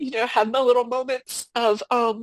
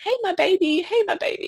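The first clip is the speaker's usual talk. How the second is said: high-pitched cooing voice. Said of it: "I would say".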